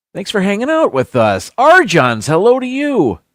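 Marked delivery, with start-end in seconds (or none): 1.6-3.2 loud, swooping shout. Greeting people who are joining in, one by name, yelling. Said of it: "I'm yelling. I'm sorry".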